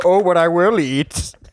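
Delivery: muffled, masked-sounding villain voice. Retelling what a woman wearing an apnea mask said, in a Bane voice. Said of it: "She had the Bane voice".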